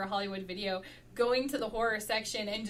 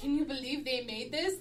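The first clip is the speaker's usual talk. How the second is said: plain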